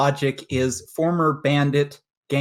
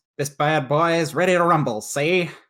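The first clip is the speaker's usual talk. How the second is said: put-on old Chicago gangster accent. Voicing a raccoon character entering his machine in a tournament: 1950s chicago gangster accent. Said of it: "sound like he's from Chicago in the nineteen fifties".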